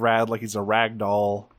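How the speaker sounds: ordinary talk, nothing marked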